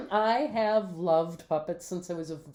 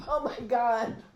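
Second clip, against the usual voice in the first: laughing hard, much higher pitch; 4 semitones higher than usual. A podcast host learns their partner owns ten puppets, laughing hard. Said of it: "I can't stop laughing".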